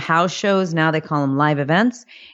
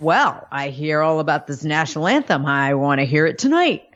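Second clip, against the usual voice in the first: put-on man's voice. Retelling what Vince said to her, in a Vince impression. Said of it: "That was an impression".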